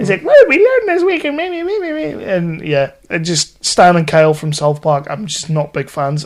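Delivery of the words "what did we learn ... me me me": mocking whiny cartoon voice, high-pitched, higher. Mocking a cartoon character who annoys: imitating Kyle's high-pitched whiny tone. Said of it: "little high-pitched whiny tone".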